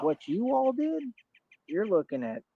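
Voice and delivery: high voice cracking and breaking mid-line. Lecturing someone about prison time, the speaker is voice cracking. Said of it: "your voice just cracked".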